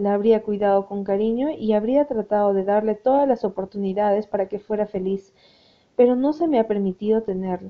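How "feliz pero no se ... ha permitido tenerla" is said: plain reading voice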